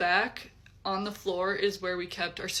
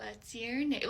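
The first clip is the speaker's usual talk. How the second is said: put-on eerie old-woman small-child voice, quieter; 3 semitones higher, 5 dB quieter than usual. Retelling the voice that came from a closet, in a creepy old lady child voice. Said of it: "in this creepy like old lady slash small child voice".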